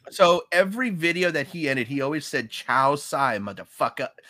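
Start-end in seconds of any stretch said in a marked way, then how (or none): 2.5-4.1 put-on Chinese accent. Quoting how a YouTuber always ended his videos, do Peter Chow's stereotypical Chinese accent. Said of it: "he had a very stereotypical Chinese accent".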